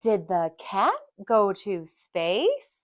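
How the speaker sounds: questioning rising tune at the end on "space". Teaching how punctuation changes reading, reading the example as a question with rising intonation. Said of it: "your voice goes up a little bit at the end".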